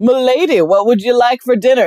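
high-pitched put-on pirate waiter voice. Retelling how the pirate waiters talked to diners: imitating pirate waiters. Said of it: "the pirate waiters just, like, couldn't get it together".

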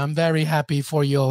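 playful, joking, sarcastic tone. Congratulating another speaker jokingly as a Peruvian: joking sarcastic tone. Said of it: "he says sarcastically".

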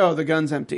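ordinary delivery

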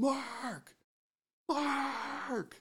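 put-on very high, far-carrying yell. Retelling scanning a river and not seeing someone, then re-enacting a yell. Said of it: "I start yelling".

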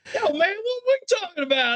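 very high-pitched, exaggerated, laid-on-thick put-on voice. Retelling a ride's talking zebra: imitating a bad Chris Rock impression. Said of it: "it was a Chris Rock impression".

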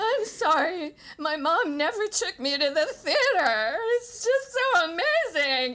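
sobbing through words, very high-pitched, very loud. Retelling what a crying girl behind her at the show said, imitating someone crying. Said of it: "both acts was crying".

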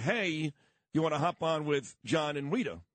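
normal talking voice

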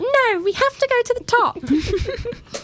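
put-on very high, slow British child voice. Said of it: "I like your extra British child voice".

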